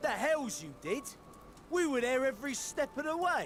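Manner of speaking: put-on pirate voice with Brooklyn accent. In a role-play, retorting to another character's boast, Brooklyn pirate accent. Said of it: "The Brooklyn pirate accent".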